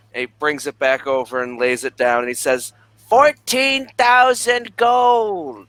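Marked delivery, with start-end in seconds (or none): 3.1-5.5 shrill shout, very high, "gold" stretched. After laying the item down, he states the price, yelling. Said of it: "Why are you yelling?".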